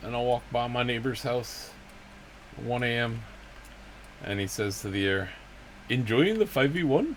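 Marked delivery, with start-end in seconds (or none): 5.9-7.2 terrible, high, put-on Hindi Indian accent. Quoting what a neighbor said to the air on a night walk: terrible put-on Indian accent. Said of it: "that's a terrible Middle Eastern accent. That was more of like a Hindi Indian accent".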